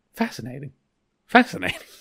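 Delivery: dry, sarcastic, unimpressed tone. Recounting a scene, acting out one character's reply to another's shouting, mock-sarcastic. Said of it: "Because he's so sarcastic".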